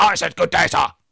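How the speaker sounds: put-on high-pitched teenage girl voice. Acting out a teenage girl turning someone down: imitating the teenage girl. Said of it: "and the teenage girl says".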